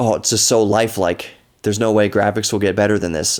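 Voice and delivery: ordinary delivery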